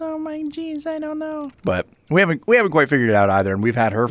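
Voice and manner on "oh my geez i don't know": very high, soft, slow cat voice. Explaining the voices they use for her, voicing her in a put-on voice. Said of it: "sometimes she talks like this".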